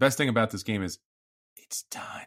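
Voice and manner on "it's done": half-joking, confidential, secretive aside. Talking with a co-host about a game, saying it very quietly. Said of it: "I'm going to say this very quietly".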